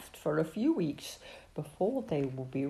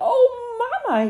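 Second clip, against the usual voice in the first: very high, delighted squealing; 3 dB louder than usual. Narrator reads a character peeking at a surprise from Mama, squealing in delight. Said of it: "he squealed in delight".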